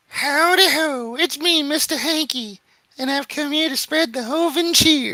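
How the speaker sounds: squeaky character voice.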